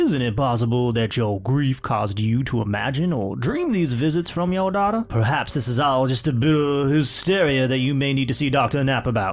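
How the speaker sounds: put-on Southern American accent. Reading a ghost story aloud, the narrator voices the questioning lawyer: southern lawyer voice. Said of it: "needed the whiskeys to do that voice".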